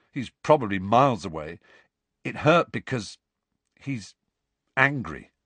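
plain

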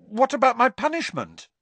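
sudden blurt, very high and swooping. Harry cuts in on Fudge's suggestion, blurted out. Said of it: "blurted Harry".

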